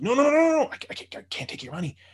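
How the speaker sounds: mock freaked-out, stumbling, very high, swooping panicked delivery. Retelling a kid refusing offered cash: imitating a freaked-out refusal. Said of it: "he freaked on me".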